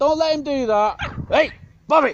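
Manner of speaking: yelled loudly. Trying to stop Bobby biting while someone pulls him back, shouting. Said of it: "Sorry about the shouting".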